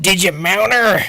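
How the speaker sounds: put-on loud, blurting old man voice. Retelling an Odd Couple scene where the dad questions one of the guys, in an old man voice. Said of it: "in that old man voice".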